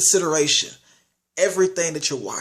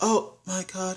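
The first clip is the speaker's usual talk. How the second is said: halting, stilted delivery with awkward pauses; 3 semitones higher, 7 dB quieter than usual. Mocking the lead actress's bad acting: imitating Sarah Hitzel's halting acting. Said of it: "everything she did was like talking like this".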